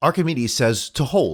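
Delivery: plain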